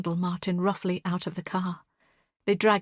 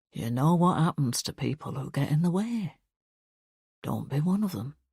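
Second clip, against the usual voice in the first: low, lowered voice; 4 semitones lower than usual. Narrating a story, a man steps closer and warns the narrator, lowered voice. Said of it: "lowers his voice until I can feel the words in my bones".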